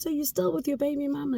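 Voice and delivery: high, fast, mild shout.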